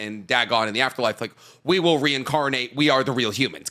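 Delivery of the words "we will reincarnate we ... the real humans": ordinary talk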